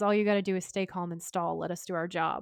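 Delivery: ordinary delivery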